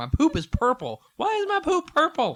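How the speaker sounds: very high, shrill, very loud, swooping, rising hollering. Acting out yelling nonsense so the yard mowers will stop, mock yelling. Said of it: "yelling random crazy shit".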